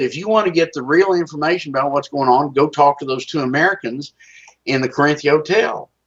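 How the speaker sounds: ordinary delivery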